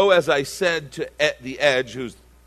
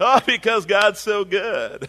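higher-pitched mock southern drawl; 8 semitones higher than usual. Mocking churchgoers who act sweet on arrival: imitating a put-on Southern accent. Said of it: "Why are you Southern?".

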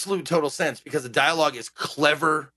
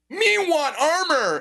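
pitched-up, high, dim-witted caveman speech; 13 semitones higher than usual. Describing how a player talks to a game shopkeeper, dumb caveman talk. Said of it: "you talk to everyone like you're a caveman".

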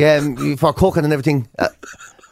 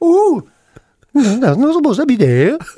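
very high, sing-song put-on Welsh accent; 9 semitones higher, 4 dB louder than usual. Show the others what Welsh people sound like, imitating a Welsh accent. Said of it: "That's what Welsh people sound like".

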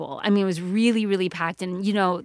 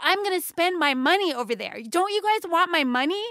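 mock entitled indignation at a very high pitch; 10 semitones higher than usual. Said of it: "I said".

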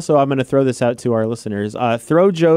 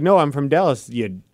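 ordinary talk

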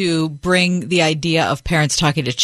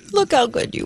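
put-on high, cooing parentese baby talk; 8 semitones higher than usual. Demonstrating how parents talk to a baby; baby talk. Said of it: "That I was just doing".

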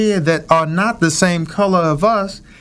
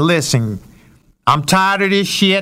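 heavy put-on Cleveland accent. Speaker retells what a man from Cleveland said, thick Cleveland accent. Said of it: "in his thickest accent".

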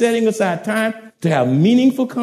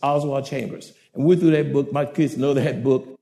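ordinary talk, nothing marked

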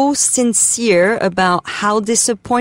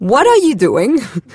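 acted, dead-straight, blunt and piercing tone; 4 semitones higher, 4 dB louder than usual. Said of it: "such a profound, honest, right through your face way".

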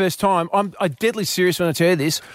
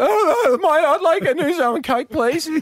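put-on unbroken young voice; 9 semitones higher than usual. Retelling ordering a drink at a bar as a teen: imitating own unbroken teenage voice. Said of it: "And that's how I used to talk".

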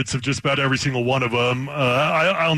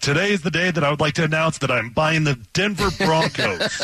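plain

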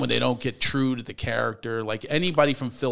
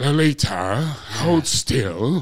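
put-on old British actor voice, louder; 5 dB louder than usual. Imitating an old British film actor's line to Lolita: James Mason impression. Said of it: "old British actors like James Mason".

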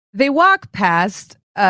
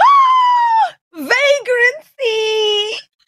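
piercing, very high shriek with drawn-out "ah". Voicing an NPC woman bumped by a stumbling character: shrieking. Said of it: "the woman, uh, shrieks and is like".

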